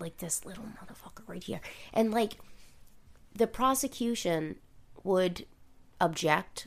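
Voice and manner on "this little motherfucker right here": gritted teeth, much quieter and faster. Explaining how you have to say the phrase about him, through gritted teeth. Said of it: "You have to grit your teeth when you say it".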